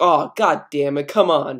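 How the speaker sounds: ordinary talk, nothing marked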